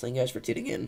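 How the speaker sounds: voice keeps cracking and breaking. Thanking viewers for tuning in near the end of the stream: voice cracking. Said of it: "Why am I voice cracking so hard?".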